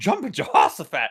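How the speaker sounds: mock, very high, punchy, emphatic, excited cry. Imitating an older coworker's surprised exclamation: imitating an excited, emphatic exclamation. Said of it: "Tons of emphasis and excitement".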